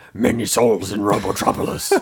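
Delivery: put-on deep, monstrous character voice. Retelling a character's line about Robotropolis, in a deep monster voice. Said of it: "he's got this deep monster voice".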